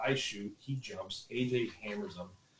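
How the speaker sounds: normal talking voice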